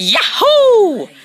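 shrill yell at full blast. Showing off their improved voice, high-pitched Mario voice. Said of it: "here comes the high pitch of Mario".

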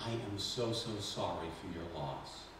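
soft, low whisper. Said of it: "I whispered in her ear".

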